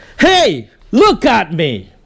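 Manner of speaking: loud voice with swooping pitch. Speaker demonstrates winning back people's drifting attention, loud voice. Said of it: "But when you're loud".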